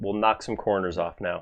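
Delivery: plain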